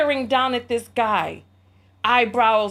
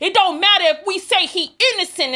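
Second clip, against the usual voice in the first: put-on holler, higher; 8 semitones higher, 4 dB louder than usual. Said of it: "He's hollering at this man".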